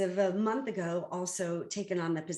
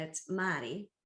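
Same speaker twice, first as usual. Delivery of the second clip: Boston-accented pronunciation; 3 dB quieter than usual. Speaker telling of her attorney, saying his name in a boston accent. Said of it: "with a Boston accent".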